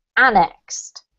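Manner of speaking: first syllable an stressed in annexed. Pronunciation feedback on a tricky word: stress on an in annexed. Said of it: "the emphasis is on an, so it's annexed".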